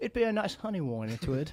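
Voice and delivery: put-on British accent. Repeating the phrase on request: slow British accent. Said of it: "And make it British".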